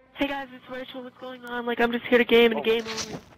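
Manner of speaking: fake girlish voice. Trying out a new voice for subscribers, Rachel girl voice. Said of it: "the girl voice".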